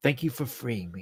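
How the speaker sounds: whispering voice. Voicing a sword that speaks into a player's mind: whispered voice in your head. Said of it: "a whispered voice straight to your head".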